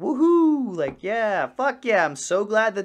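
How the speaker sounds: put-on fake enthusiastic whoop, high, loud and drawn out. Recalling his time in the Marines, mock-enthusiastic false motivation. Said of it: "false motivation things".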